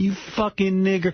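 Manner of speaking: frantic, very high-pitched, shrill shriek. Retelling how a woman outside a club screamed at a security guard: imitating someone screaming. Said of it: "she's screaming and calling the guy".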